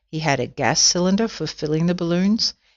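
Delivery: plain reading voice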